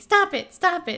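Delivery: high, loud, repeated scream.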